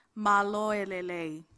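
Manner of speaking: very slow, careful, each syllable drawn right out. Speaker teaching an audience a phrase to repeat after them: spoken slowly. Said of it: "I'll say it slowly".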